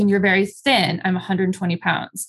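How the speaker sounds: ordinary talk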